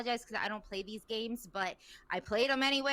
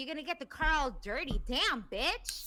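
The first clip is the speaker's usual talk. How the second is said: flamboyant, sassy, campy, teasing put-down tone; 3 semitones higher than usual. Retelling what he said about the car getting dirty: imitating sassy banter tone.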